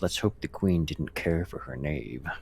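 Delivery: muttered, hushed half-whisper under the breath. Stepping onto the path toward the castle, half-whispering under breath. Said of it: "whisper under my breath".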